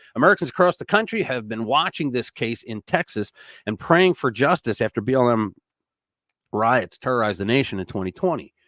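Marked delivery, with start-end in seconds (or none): none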